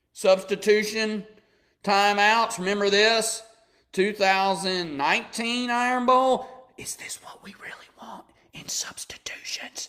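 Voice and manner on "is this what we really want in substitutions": hushed, breathy, soft, very quiet whisper. Mocking a complaint about substitution timeouts: Joe Biden whisper voice. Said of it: "That's my Joe Biden whisper voice".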